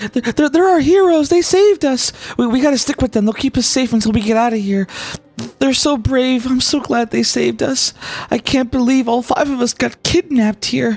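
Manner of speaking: frightened female half-whispers. Voicing kidnapped women following the heroes, scared half-whispering women. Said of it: "they all just keep whispering".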